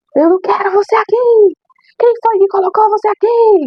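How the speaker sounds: hate-filled, high, raging monster-voice scream. Speaker recounting a man's furious attack on them, retelling his monster-voiced shouting. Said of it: "gritava com aquela voz de monstro mesmo".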